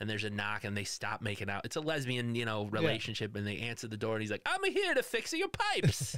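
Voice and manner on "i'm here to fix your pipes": bad Italian accent, very high and slow. Retelling a video scene, the man at the door in a terrible Mario impression. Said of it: "It's a terrible Mario impression".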